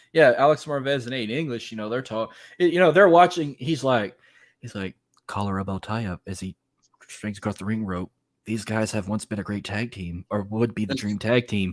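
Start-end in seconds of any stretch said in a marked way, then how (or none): 5.3-11.8 hushed, quiet, low, calm golf commentator voice. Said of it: "quiet, talking like you're watching freaking golf".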